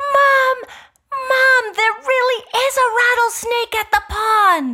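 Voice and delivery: put-on very high, loud kid's voice calling out. Retelling the kids calling from the pond: imitating the kids calling. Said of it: "My kids were both down at the pond".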